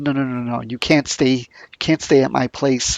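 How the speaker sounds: acted-out grumpy man voice. Retelling a story about a stranger knocking at a cabin, imitating a grumpy man. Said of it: "he's very grumpy".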